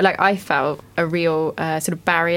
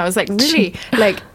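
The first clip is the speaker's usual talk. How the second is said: ordinary delivery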